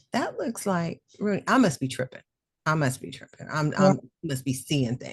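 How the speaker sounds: plain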